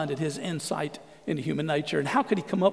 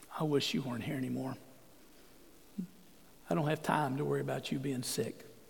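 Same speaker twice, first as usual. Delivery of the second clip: quiet, much quieter; 3 semitones lower, 11 dB quieter than usual. Retelling what Ivan's daughter says at his deathbed, quietly. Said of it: "just quietly goes".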